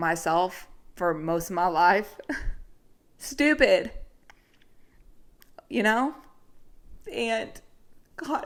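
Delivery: crying, tearful voice, high and slow. Sharing something personal, as if in a therapy session, the speaker is crying. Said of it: "I'm crying again".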